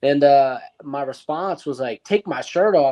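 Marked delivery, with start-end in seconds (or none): 2.0-2.9 put-on upset tone, higher. Retelling the speaker's own reply to airport security: imitating own upset reply. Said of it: "I was upset".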